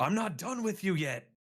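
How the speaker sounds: all-out high, loud scream. In a game, a player declares an attack and acts out the character: screaming. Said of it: "and I just scream".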